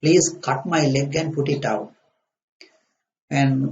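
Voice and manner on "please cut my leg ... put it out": usual speaking voice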